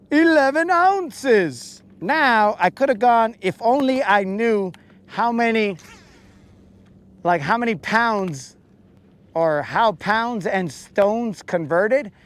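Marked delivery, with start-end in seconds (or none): 0.1-1.8 mock dramatic, drama-filled delivery, higher pitched. Announcing the weight of the catch: put-on drama-filled announcement. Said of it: "let me say it in the most drama-filled way".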